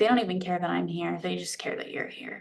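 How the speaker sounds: mock muttering, under breath. Quoting what a report said while they were walking in: retelling a mutter under breath. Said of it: "under his breath".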